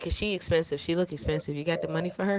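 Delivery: plain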